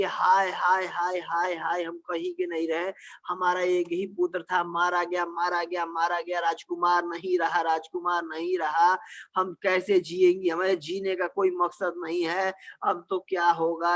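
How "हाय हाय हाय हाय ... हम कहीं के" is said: plain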